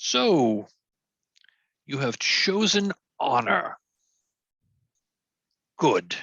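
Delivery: very slow, towering, echoing, commanding pronouncement. Voicing the Green Knight looking down from full height: commanding echoing voice. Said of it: "His voice echoes off the grove, commanding".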